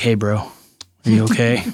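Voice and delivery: grave, concerned, dead serious, very slow. Retelling a friend asking if he was okay: imitating Ray, all serious. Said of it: "he's like, all serious".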